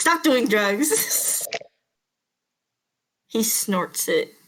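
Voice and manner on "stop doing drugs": slow, high mock lecturing tone. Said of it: "And I was like".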